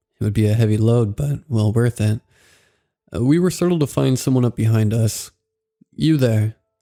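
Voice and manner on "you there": raspy voice of a lifelong smoker. Reading a story, an older man calls out: raspy voice of a lifelong smoker. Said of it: "in the raspy voice of a lifelong smoker".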